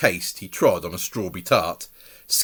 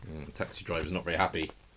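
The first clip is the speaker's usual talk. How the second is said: ordinary delivery, nothing marked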